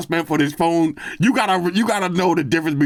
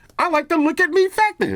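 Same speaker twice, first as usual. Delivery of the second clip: very high, show-off voice pushed up; 12 semitones higher than usual. Talking about loving showy tech, in a high voice. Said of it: "Why am I using the high voice?".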